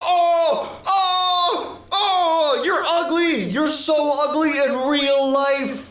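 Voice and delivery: very slow, high, drawn-out raging delivery. Doing an impression of Enzo getting killed unfairly mid-game: impression of Enzo raging. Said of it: "here's my impression of Enzo".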